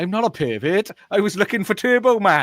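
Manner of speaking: put-on Welsh accent. Quoting a film line for the others to guess, in a welsh accent. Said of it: "as I get into my lovely Welsh accent".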